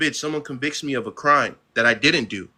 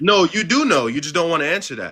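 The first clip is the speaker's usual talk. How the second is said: heated, angry, hard-pressed accusing tone; 4 semitones higher than usual. In an argument with the other speaker, angry yelling. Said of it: "you're yelling".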